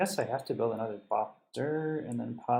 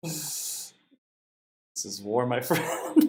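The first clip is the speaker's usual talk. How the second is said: slow, laughing through the words; 3 dB louder than usual. Declaring war on another player mid-game, laughing while talking. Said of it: "I can't even say that with a straight face".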